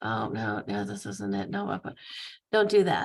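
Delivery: very low muttering, half to self, under breath. Retelling how a phone agent read aloud while searching: imitating someone mumbling under his breath. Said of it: "reading out loud under his breath".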